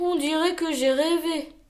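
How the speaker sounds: spoken with a sigh. Reading a story aloud, a character Lou finding no golden book: sighing. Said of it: "soupira Lou".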